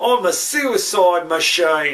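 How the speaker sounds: rough, poorly done put-on Australian accent. A host tries the line again, this time in an Australian accent. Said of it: "should do it with an Australian accent".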